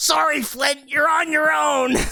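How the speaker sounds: yelling goblin voice. Narrating a fight, voicing the other goblins yelling back. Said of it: "The other goblins yell back".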